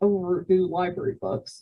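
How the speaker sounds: ordinary delivery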